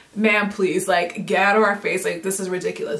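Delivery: ordinary talk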